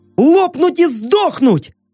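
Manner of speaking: very high-pitched, barked-out delivery. Yorka meets the narrator's group at the steel gates of Zombieland: barked. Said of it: "рявкнула Йорка".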